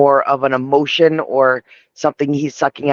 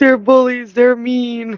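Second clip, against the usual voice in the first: mock crying, higher-pitched; 10 semitones higher than usual. Retelling a character's excuse about bullies: imitating someone crying.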